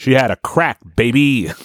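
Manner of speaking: put-on slow, weighty, pointed stress on the word baby.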